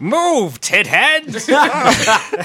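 high, raspy, swooping cartoon villain voice. Joking with the others, the speaker tells someone to move in a Skeletor voice. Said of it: "let alone in a Skeletor voice".

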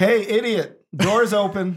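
loud booming shout. Player casting thaumaturgy and calling out to someone: booming yell. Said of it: "It is probably unwise to be yelling".

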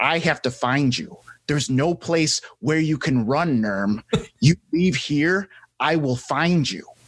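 menacing, threatening, intimidating delivery. Gripping a character's wrist in a scene and warning him: intimidating. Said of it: "he's gonna intimidate him now".

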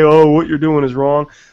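ordinary talk

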